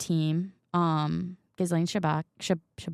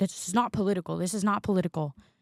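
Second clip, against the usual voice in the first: indignant, angry, insistent, repeated. Retelling a reporter's reply at a press conference: imitating an angry reporter. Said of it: "very angry and was like".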